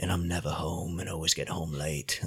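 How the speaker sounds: put-on stupid-sounding voice, low pitch, soft. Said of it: "Why did you do that stupid voice?".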